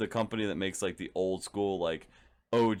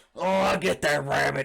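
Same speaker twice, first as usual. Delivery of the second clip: failed, high, rough-edged, hollered cartoon cowboy voice; 6 semitones higher, 6 dB louder than usual. Another speaker has just named Yosemite Sam; answer with a bad Yosemite Sam impression. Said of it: "Yo, Yosemite Sam".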